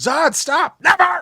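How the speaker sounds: very high, loud, furious yell. Discussing a film scene, acting out how he yells at zod, imitating a yell from a film. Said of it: "yells it at him in that scene".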